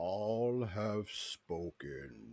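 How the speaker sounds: big, loud, thunderous booming voice. Voicing a voice that the players all hear: booming voice. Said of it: "you all hear this booming voice".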